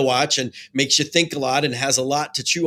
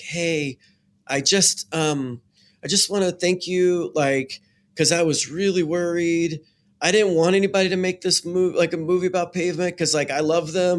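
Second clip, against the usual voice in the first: put-on shy, sweet woman's voice, higher; 4 semitones higher than usual. Retelling a woman's thanks for the Pavement movie, imitating a shy, sweet woman. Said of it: "she was just like really shy and sweet".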